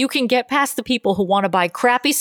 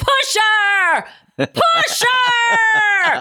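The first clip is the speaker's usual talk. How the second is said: mock very high scream, stretched long; 11 semitones higher than usual. Recounting a man on the A train getting in a woman's face, retelling a man screaming. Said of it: "just started screaming".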